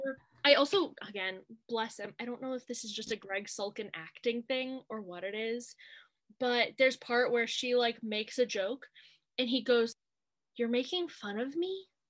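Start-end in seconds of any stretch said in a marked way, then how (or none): 10.6-11.8 wounded, dead-serious, sad, hurt, small voice. Retelling an actor's line from a movie scene: imitating a sad, hurt line. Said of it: "he sounds so sad, like a kicked puppy".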